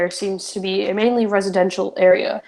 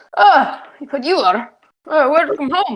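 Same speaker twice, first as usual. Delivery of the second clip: gruff put-on dwarf voice, much higher; 7 semitones higher than usual. A game narrator voicing a dwarf welcoming an adventurer, gruff dwarf voice. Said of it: "he introduces himself in a gruff voice".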